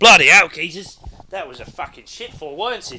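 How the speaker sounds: very loud, high-pitched, badly done fake Australian accent. Imagining a man who tripped and fell into an accent: mock Australian accent. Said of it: "he tripped over and he stood up and went".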